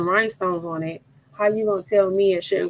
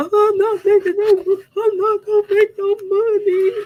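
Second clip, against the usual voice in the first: put-on crying through the words, very high; 14 semitones higher, 4 dB louder than usual. Retelling answering the husband at one in the morning: imitating own crying. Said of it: "And I'm crying, like, tears".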